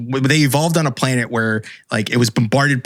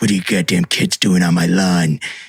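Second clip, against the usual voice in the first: put-on low, cranky, grumpy old man voice; 5 semitones lower than usual. Retelling aliens waking up angry at inferior civilizations: grumpy old man voice. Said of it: "it's a very old man".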